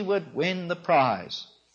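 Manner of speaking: ordinary talk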